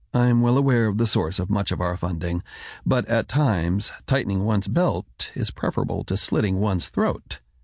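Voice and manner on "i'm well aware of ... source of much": ordinary delivery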